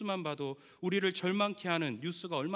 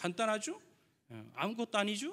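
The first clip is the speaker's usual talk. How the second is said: Chungcheong dialect delivery; 4 semitones higher than usual. Quoting what a famous cook says most, in Chungcheong dialect. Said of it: "충청도 사투리로".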